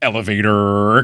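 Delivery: overdone, exaggerated American accent with heavy R's. Imitating Tim's American accent on the word elevator: Tim's put-on American accent. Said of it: "he always goes really heavy on the R's when he does his American accent".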